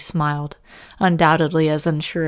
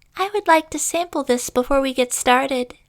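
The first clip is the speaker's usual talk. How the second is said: very high, squeaky cartoon voice, pushed as high as possible; 10 semitones higher than usual. Voicing a little girl at the bar: SpongeBob voice. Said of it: "Pitch it up".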